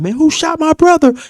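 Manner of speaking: very high, furious, upset crying yell, acted out. Retelling a brother at the hospital screaming and hollering: imitating a furious, crying yell. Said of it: "he's in the hospital screaming and hollering".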